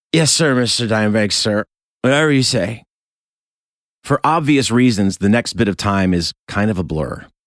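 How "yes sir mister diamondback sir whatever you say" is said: mock drunken speech, higher. Retelling what he said to Mr. Diamondback while drunk; imitating own drunken stupor. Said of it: "in my drunken stupor".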